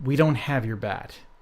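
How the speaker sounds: ordinary talk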